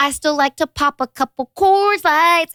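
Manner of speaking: put-on high, slow little toddler baby-talk voice. Retelling a little girl's answer to a question, imitating her little baby voice. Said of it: "in her little baby voice".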